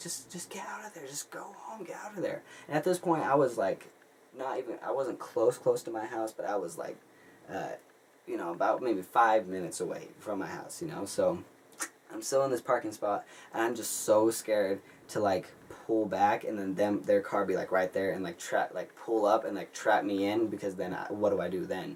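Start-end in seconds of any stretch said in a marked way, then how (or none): 0.0-2.4 high-pitched, urgent whisper. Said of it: "she's like".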